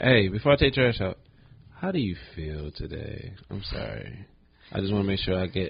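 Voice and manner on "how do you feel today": very mellow, relaxed, laid-back tone. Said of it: "I'm saying it in a very mellow".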